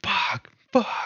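contained, mild, restrained, half-voiced scream. Describing a film scene where a character freaks out, retelling a scream. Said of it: "he starts screaming".

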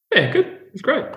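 voice jumping up very high. Answering how last week's procedure went, voice pitched way up. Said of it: "your voice went up about five octaves then".

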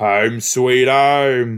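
put-on strong British accent, stretched "home". Imitating a guest's strong British accent: imitating a strong British accent. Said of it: "He's just like".

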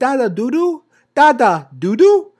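put-on very high, slow, drawn-out little-girl toddler voice. Retelling how a daughter begs for videos: imitating his daughter. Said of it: "She runs up to me and she says".

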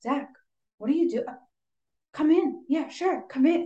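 badly acted overdone surprise. Critiquing a scene where Zach knocks at the door, imitating Jesse's bad acting. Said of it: "I hate the bad acting from Jesse".

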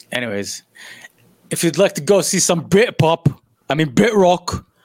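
badly done, horrible fake British accent. Closing a segment by addressing the audience, in a bad british accent. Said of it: "I don't know why I'm talking like that. My British accent is horrible".

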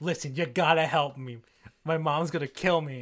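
imploring, pleading hard, begging tone. Retelling a scene where Thor begs Captain Marvel for help: imitating Thor pleading. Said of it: "pleading to Captain Marvel".

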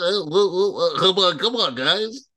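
small, high voice. Mocking how an old football coach talks, imitating Lou Holtz talking. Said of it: "he be talking like this".

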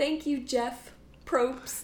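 overjoyed, thrilled, elated, excited delivery. Retelling a winner's thanks after being told she won: imitating elated thanks. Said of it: "elated. She's, like, so excited".

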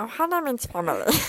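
put-on cartoon alien voice. Showing a planned impression: Stitch impression. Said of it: "my Stitch impression".

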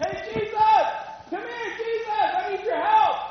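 shrill, very high scream, projected loudly. Acting out a man calling to Jesus across a crowd: screaming for help. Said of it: "I'm screaming".

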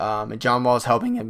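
voice cracking. Talking to listeners about a basketball player's scoring, voice cracking. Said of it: "voice crack, excuse me".

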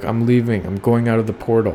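ordinary talk

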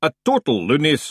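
ordinary delivery

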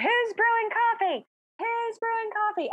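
play-acted very high shout, as loud as possible. Recalling running into the street during a storm, retelling a yell. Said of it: "I just start yelling".

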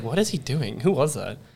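ordinary talk, nothing marked

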